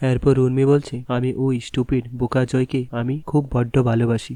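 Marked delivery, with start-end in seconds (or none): none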